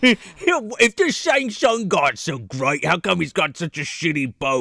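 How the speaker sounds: put-on trying for an Australian accent. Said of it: "I gotta get into the Australian dude".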